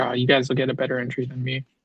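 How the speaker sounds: soft, sad, sorry, mournful voice. Imitating another speaker who sounded sad about his losses: mock sad voice. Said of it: "he sounds so sad when he says that. He's like".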